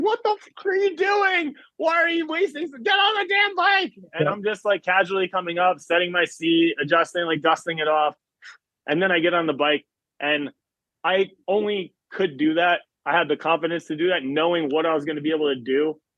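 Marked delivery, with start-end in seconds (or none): 0.0-3.9 play-acted, very high, exasperated, frustrated screaming. Recalling a video of themself walking up to the bike, reenacting screaming. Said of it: "I'm like screaming".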